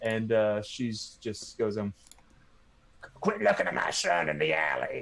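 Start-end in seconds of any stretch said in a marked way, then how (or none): 3.2-5.0 put-on crotchety old lady voice, creaky and rough-edged. Voicing an old lady stepping toward a man in the story, crotchety old lady voice. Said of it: "crotchety old lady".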